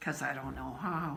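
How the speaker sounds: ashamed, embarrassed tone. Retelling own past answer in a story: imitating own shamed tone. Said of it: "in a shamed way".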